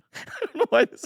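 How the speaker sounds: laughing while talking. Sharing a death headline with the other speakers, laughing while talking. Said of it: "Why are you laughing?".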